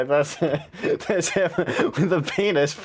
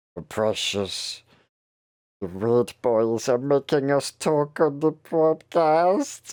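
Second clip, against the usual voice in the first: put-on strained, hunched goblin creature voice. Hunching their shoulders on a podcast to do a voice, strained creature voice. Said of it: "To do to do the voice, I actually have to like pull my fucking shoulders up and like actually hunch".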